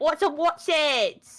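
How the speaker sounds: put-on southern English accent. Comparing snack names with another speaker, using a stereotypical southern english accent. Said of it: "if you use the um stereotypical Southern English accent".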